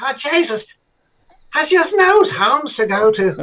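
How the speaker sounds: Dublin Irish accent. Asked how it would be said in Dublin, speaker answers in a Dublin accent. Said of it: "And how would you say that? ... In Dublin".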